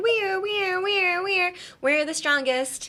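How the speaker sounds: very high, wailing siren voice. A speaker explaining emphasis pretends to be an ambulance, siren-like wailing voice. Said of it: "pretend you're an ambulance and be like".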